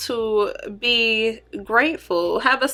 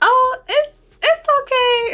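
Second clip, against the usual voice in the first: high, tiny, cute little voice; 6 dB louder than usual. Recounting what Keandre said while working on the speaker; imitating Keandre's cute little voice. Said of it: "she has, like, the cutest little voice".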